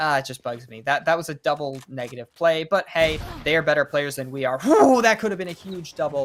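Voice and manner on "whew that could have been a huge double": excited, pitched-up voice breaking on the whoop. Commentating a round, the speaker reacts to a near huge double, voice cracking. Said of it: "My voice cracked".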